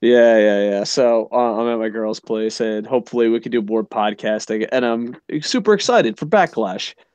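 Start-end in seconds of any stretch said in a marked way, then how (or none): 4.7-6.9 fake, hollow, feigned, insincere enthusiasm. A podcaster talking about the upcoming Backlash event, with fake excitement. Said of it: "that was probably the fakest I've ever said".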